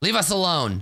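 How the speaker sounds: curt, sharp, snapping tone. Narrator voices a woman answering a knock on the door; woman's voice snapping. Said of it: "you hear a woman's voice snap".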